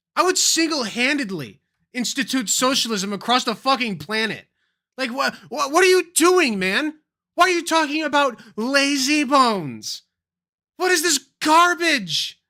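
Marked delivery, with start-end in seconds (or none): 5.2-12.4 loud, high, seething, fed-up rant. Venting to the guys about this man's talk, pissed off and seething. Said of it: "I'm so pissed off".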